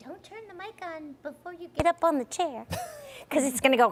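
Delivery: very high-pitched, squeaky voice. Imitating the director's warning about the mic and chair: imitating Jay. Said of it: "That's how we imitate, we imitate Jay like that".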